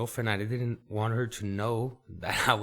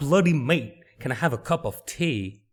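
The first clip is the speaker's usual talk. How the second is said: loud, clumsy, bad fake British accent; 4 semitones higher, 6 dB louder than usual. A podcast host attempts a faux british accent on air: bad fake british accent. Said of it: "I really don't have the accent".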